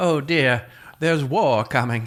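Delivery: classic put-on Southern belle accent. Describing the classic southern belle fanning herself, southern belle voice. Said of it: "It's the Southern Belle".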